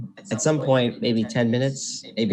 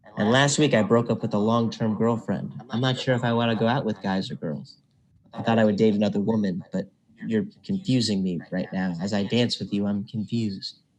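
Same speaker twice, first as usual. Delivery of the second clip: plain reading voice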